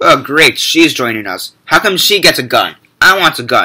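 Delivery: snarky, sarcastic, swooping robot voice. Retelling a movie droid's complaint about a newcomer: imitating a sarcastic droid. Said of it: "he's really sarcastic like that".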